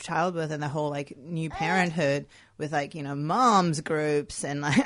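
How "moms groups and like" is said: louder American accent on the word moms. A speaker talking about new parenthood slips into an American accent. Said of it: "I don't know why I did an American accent there".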